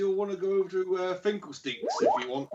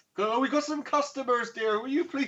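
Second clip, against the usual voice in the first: higher-pitched woman's voice; 6 semitones higher than usual. Voicing a woman who pipes up in a shop: woman character voice. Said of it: "as the woman pipes up".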